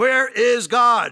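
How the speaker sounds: stern tone, slow and loud.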